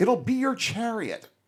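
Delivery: blurted out high, eager and enthusiastic.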